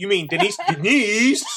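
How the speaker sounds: loud, high-pitched, furious substitute teacher voice.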